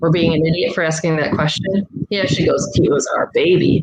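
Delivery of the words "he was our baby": put-on angry man's tone, low, slow, fed up. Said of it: "that same low voice".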